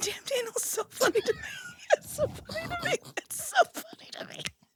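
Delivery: whispered, breathy laughing, near crying. Saying how funny a joke is, laughing while talking. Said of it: "I'm almost crying now".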